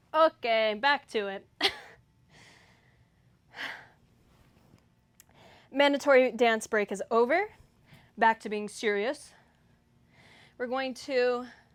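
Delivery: out of breath. Getting back to it after a mandatory dance break, out of breath. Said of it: "I'm like out of breath after doing all that".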